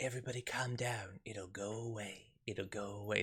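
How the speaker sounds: creepy, very quiet, low, breathy murmur. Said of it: "That's what he does".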